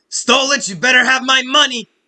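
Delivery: shrill, very high, very loud furious scream. A game narrator voices a woman the players hear as they enter, yelling. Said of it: "you hear a woman yell".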